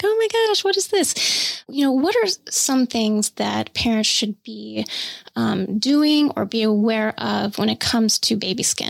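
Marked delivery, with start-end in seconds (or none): 0.0-1.6 high, panicked, freaking-out voice. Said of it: "parents are freaking out and they're like".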